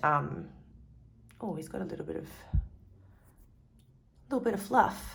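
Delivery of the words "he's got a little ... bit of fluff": giggling, laughing in the middle of the sentence. Pointing out a bit of fluff during a card reading, laughing while talking. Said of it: "I'm laughing at a potentially serious situation".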